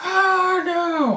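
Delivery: very high, screaming cry. A game master voices the girlfriend screaming behind him, screaming. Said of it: "his girlfriend Robin starts screaming behind him".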